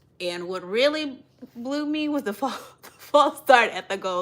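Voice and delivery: speaking through laughter, laughing through the words. Reviewing a terrible game for the Cowboys, laughing while talking. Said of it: "I really have to laugh to keep from crying".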